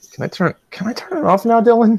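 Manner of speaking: sad, sorrowful, high-pitched small pleading tone. Asking to turn off the camera after a punishment: sad voice. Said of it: "you sounded so sad when you asked me".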